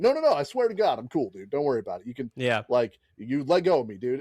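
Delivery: insistent, emphatic delivery with swooping pitch. Comparing a wrestler to a guy kicked out of a bar, imitating him. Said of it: "a dude getting kicked out of a bar".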